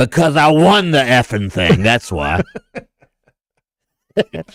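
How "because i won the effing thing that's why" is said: rough, really gruff voice. Retelling a player's answer about still playing the Masters, imitating Doug's real gruff voice. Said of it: "You know what he said in a real gruff voice?".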